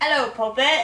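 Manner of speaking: put-on British pirate accent. Talking about English accents, answering in a Jack Sparrow voice. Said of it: "Jack Sparrow".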